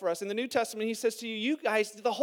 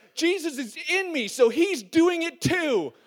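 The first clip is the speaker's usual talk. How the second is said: put-on child voice, high and hollering; 5 semitones higher, 4 dB louder than usual. Parent retelling a fight between sons Finn and Max, imitating a child yelling back. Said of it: "Max turns around and yells back".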